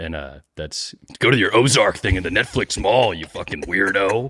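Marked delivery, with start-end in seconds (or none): 1.2-4.3 put-on gruff actor voice, sometimes higher. Doing an impression after being asked to try one: Will Arnett impression. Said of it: "I could maybe try an Arnett".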